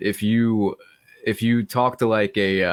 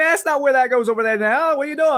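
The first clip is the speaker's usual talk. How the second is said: put-on Cajun accent, pitched very high; 3 dB louder than usual. Speaker acts out a Cajun person in Louisiana reacting, in a Cajun accent. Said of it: "doing it to a literal Cajun person".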